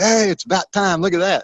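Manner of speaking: celebrating, voice pitched way up. Retelling a golf partner celebrating his shot, mock-celebrating. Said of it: "He's celebrating like".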